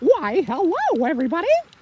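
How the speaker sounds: tiny, very high cartoon mouse squeak. Performer demonstrating voices from his voiceover act to the audience, Mickey Mouse voice. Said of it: "a lot of Mickey Mouse".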